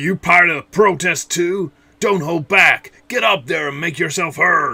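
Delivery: put-on angry American accent. Voicing anime protesters, giving everyone an angry American accent. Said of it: "I'm giving everyone their own angry American accent".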